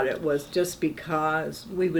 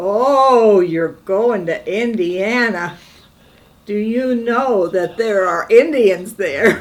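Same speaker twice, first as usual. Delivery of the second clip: booming, very loud, high-pitched Irish brogue; 5 semitones higher, 10 dB louder than usual. Quoting a man who heard of their engagement, loud, very irish accent. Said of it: "very Irish accent".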